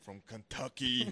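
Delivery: put-on thick Austrian accent. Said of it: "he'll still have his accent".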